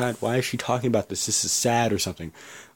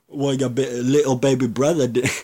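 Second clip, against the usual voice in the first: terrible, clumsy put-on English accent; 3 dB louder than usual. Retelling an exchange, the speaker quotes Paige's reply to Charlotte, bad English-accent Paige impression. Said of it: "That's my English accent".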